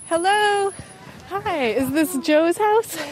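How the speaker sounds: very high, winded, breathless panting. A reporter arrives at a trailer after climbing a steep, muddy driveway, panting. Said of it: "That's why I'm panting".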